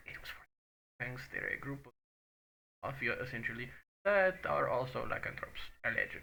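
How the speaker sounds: hushed conspiratorial whisper. Telling a character in his ear about a gang: whispering. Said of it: "I'm gonna whisper in his ear".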